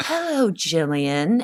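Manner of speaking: put-on evil, sinister woman's voice. Recalling Brianna opening her eyes and greeting Jillian: evil woman voice. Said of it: "she would be this like evil woman".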